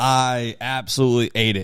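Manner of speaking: normal talking voice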